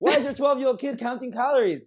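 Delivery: loud, shrill, outright yelling. Ranting about a parent making a twelve-year-old count calories, shouting. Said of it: "sorry, I'm shouting".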